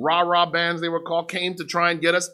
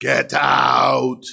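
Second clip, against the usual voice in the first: deep, low voice with "out" drawn out long; 5 semitones lower, 6 dB louder than usual. Retelling a woman rising off a bed to order him out, imitating a deep voice. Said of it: "with this deep voice".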